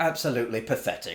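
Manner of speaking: ordinary delivery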